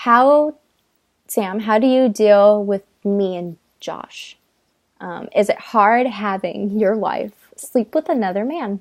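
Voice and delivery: ordinary talk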